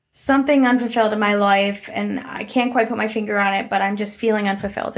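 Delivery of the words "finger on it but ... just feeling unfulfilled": ordinary talk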